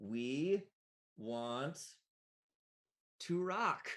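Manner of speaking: mechanical, machine-like robotic delivery. Game master voices something speaking from behind the players: mechanical voice. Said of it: "in a mechanical voice that says".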